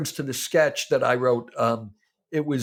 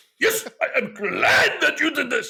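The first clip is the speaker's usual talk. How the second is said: put-on very high, guttural Japanese accent; 11 semitones higher than usual. Retelling acting out a character for a performer: guttural Japanese character voice.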